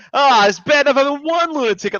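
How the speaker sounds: high, long-suffering, grumbling complaint. Retelling a quotable line from Tommy, imitating Tommy complaining. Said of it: "just something about the way he said it".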